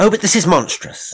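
very high, shrill, loud, outraged cry. Miss Herries responds to Mrs. Edwards having only two rooms, with an angry cry. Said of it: "Miss Herries cried".

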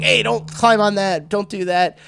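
high, uptight scolding yell. Pitching a manager character who yells at kids: yelling at kids. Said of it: "yelling at the kids".

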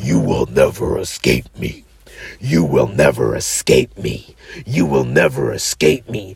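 very deep, rough, creaky demonic voice. Retelling what a goat face demon said during a trip: imitating a goat demon's voice. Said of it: "and it said".

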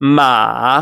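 ma with pitch falling, then climbing back up. Showing the traditional taught tone for horse: ma dips then rises. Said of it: "So your voice drops and comes back up".

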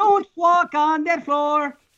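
put-on slight French Canadian accent. On the show, the speaker delivers a warning line with a slight french canadian accent. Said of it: "He's even got a little bit of an accent there".

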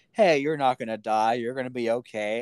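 put-on reassuring voice. Retelling a scene where one man reassures a shot passenger, imitating a reassuring tone. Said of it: "really trying to assure him".

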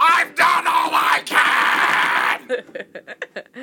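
high, drawn-out, stretched shout. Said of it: "You sound like George C. Scott".

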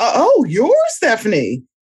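taken-aback, surprised, swooping exclamation. Describing how people react on meeting her, the speaker imitates surprised people. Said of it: "people are surprised when they see me".

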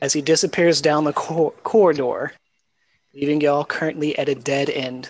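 ordinary talk, nothing marked

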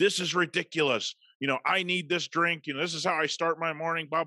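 mock irate, angry rant, pitched high. Retelling a customer's complaint to a coffee shop worker: imitating an angry rant. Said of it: "She goes off".

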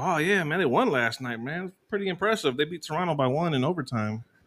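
sarcastic tone dressed up as fake admiration. Retelling a reply to a client about the Bulls: retelling own sarcastic reply. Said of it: "being sarcastic and shit".

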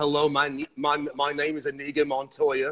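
put-on British accent. Retelling a stare as a movie quote: British accent as Inigo Montoya. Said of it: "imagine this with a British accent".

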